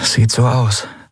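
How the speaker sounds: murmuring, mumbled. A narrator reading Endriel's reply to Nelen's question, murmured. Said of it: "murmelte Endriel".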